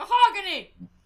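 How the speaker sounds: sudden triumphant shout, high and very loud.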